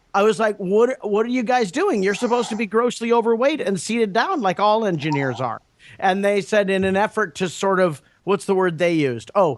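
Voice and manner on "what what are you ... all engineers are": ordinary delivery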